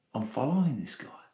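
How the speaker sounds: soft, inward, thinking-to-self voice.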